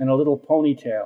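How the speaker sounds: ordinary delivery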